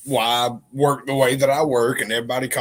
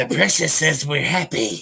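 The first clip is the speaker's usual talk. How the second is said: raspy, creaky, hoarding creature voice; 2 semitones higher than usual. Riffing on the other speaker's joke by doing a Smeagol voice. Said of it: "be like Smeagol".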